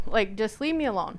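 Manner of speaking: ordinary talk, nothing marked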